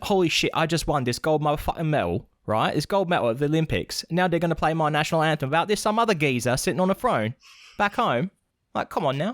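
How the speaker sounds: put-on London Cockney accent, geezer style. Voicing an imagined Olympic gold medal winner: Cockney accent. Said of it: "I better do the right accent".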